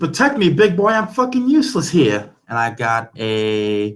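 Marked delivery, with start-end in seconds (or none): 0.0-2.3 very high, piercing, shrill yelling. Voicing a character calling to an ally for protection: yelling. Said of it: "she's also yelling to Knuckles".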